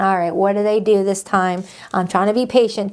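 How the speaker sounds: ordinary delivery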